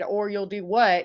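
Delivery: light, mild yell, acted out. Retelling what a girl said back to her across the commons, in a real loud voice. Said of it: "Like in a real loud voice".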